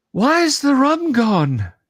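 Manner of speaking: almost pleading voice. A storyteller voices a stranger who staggers out before the players, almost pleading. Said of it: "says with an almost pleading voice".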